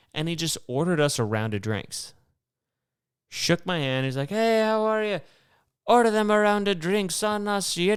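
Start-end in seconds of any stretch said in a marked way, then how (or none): 4.3-7.7 put-on Irish accent, pitched very high. Retelling a man who bought them a round of drinks, in an Irish accent. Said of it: "he had an Irish accent".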